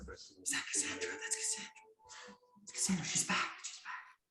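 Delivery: soft, hushed whispers. Voicing townsfolk who spot the princess in the street: whispering townsfolk. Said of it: "you kinda hear the whispers of".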